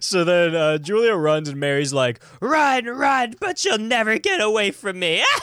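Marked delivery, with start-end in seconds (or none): 2.4-5.2 insane woman voice, much higher. Retelling the scene where Julia runs and Mary calls after her, Mary's insane woman voice. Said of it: "she sounds like an insane woman".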